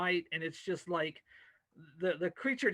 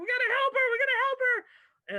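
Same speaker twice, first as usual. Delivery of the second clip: shrill, high, loud panicked screaming; 6 dB louder than usual. Narrating a scene, voicing Rachel pulling at a girl's legs: Rachel screaming. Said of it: "while she's like screaming".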